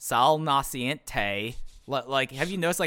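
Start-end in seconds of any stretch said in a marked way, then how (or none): 0.0-1.6 put-on, odd, weird-sounding Cleveland-Southern accent. Mocking how Johnny Gargano says a phrase in a promo: imitating Johnny Gargano's weird Cleveland-Southern accent. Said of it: "the weirdest Cleveland slash Southern accent ever".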